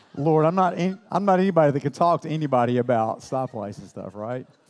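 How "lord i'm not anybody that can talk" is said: usual speaking voice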